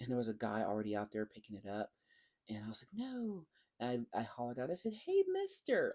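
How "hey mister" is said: put-on very high, childlike little-kid voice. Retelling hollering at a man picking something up, calling out like a little kid. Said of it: "like a little kid".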